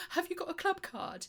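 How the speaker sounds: mock, very high, jittery, nervous voice. Retelling how a shop assistant asked during labour: imitating a nervous question. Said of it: "She said it really nervously".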